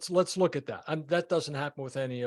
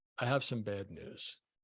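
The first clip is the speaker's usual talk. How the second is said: soft late-night radio DJ voice, much lower; 6 semitones lower, 6 dB quieter than usual. Teaching how to deliver bad news, use a late-night FM DJ voice. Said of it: "practice the late night F M D J voice".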